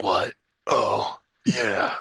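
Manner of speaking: terse, clipped action-movie hero delivery. Describing a revenge movie with few lines, imitating its star: Keanu Reeves impression. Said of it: "there's Keanu Reeves ... He's like".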